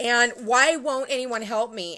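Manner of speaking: mock hysterical crying voice. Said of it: "and I'm crying, I'm hysterical".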